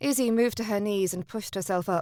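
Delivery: ordinary delivery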